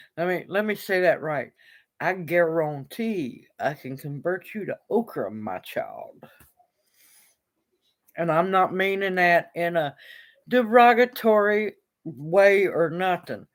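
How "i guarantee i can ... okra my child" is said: soft, sassy Southern US drawl. Saying it again to get it right, sassy southern. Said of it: "I'm just being southern and I'm being sassy".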